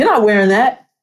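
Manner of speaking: emphatic statement tone, no rising question lilt. Showing how the line should be said, not like a question, more demonstrative. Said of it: "a little more demonstrative".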